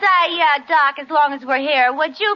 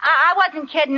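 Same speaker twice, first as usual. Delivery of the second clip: plain reading voice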